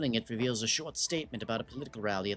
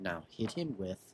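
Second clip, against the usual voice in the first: plain reading voice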